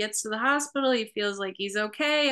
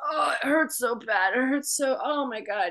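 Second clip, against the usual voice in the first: fake tearful crying in pain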